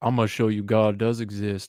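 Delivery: put-on Alabama accent. Retelling the scene where the character walks down: Nicolas Cage Con Air impression. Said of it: "he's like".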